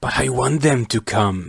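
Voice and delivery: hissing voice, sibilant hissed delivery. The Kraka answers Onewa, who warns that thousands of Matoran will come: hissing. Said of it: "the Kraka hissed".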